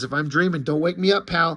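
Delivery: normal talking voice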